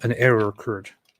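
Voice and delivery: ordinary talk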